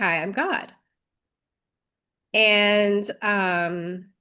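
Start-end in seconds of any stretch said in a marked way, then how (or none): 0.0-0.7 put-on female voice, slower. Recounting a spirit coming through, quoting a voice heard: imitating a female voice. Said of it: "I heard a female voice say".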